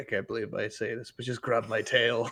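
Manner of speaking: very hushed, low, grudging sigh. Game master voicing a maned character who lets a player grab his tail, sighing. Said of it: "And then he like sighs".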